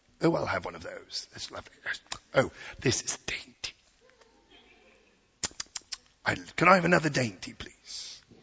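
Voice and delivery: bad, fake, put-on British accent. Speaker imagining asking for royal dainties, in a fake British accent. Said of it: "I am to sound even remotely British".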